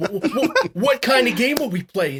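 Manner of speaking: high, slow, stuttering, halting voice. Imitating a man asked to play a game: Woody Allen impression. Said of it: "you guys did it so well".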